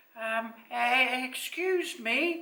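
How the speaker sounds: tiny, small, halting, hesitant, very slow voice. Narrating a character addressing the monster after glancing back at everyone, small voice. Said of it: "in a small voice he spoke".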